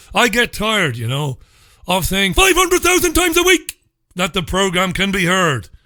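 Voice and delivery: emphatic ranting outburst, every word punched. A radio host tells listeners yet again how the program can be heard, shouting. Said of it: "Sorry for shouting at you".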